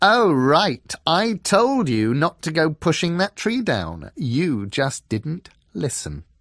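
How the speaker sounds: high, bitter, amused reproachful voice. Reading a story aloud, voicing a character's reply: higher voice, bitterly amused. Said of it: "A higher voice, bitterly amused".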